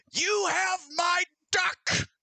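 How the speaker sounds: very high, shrill, drawn-out character shout. Voicing an archer in the road who yells at a player: yelling in character. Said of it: "he yells".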